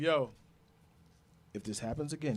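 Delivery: low voice sunk right down. Retelling a warning given after a broken collarbone: imitating a lowered voice. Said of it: "his voice got low".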